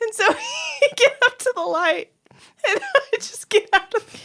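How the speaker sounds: talking through laughter, very high and swooping. Telling a funny story about leaving a cab, laughing while talking. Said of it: "It's making me laugh".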